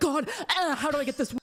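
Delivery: desperate, pleading voice. Mocking someone as desperate for a win: imitating a desperate plea. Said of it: "You're so desperate".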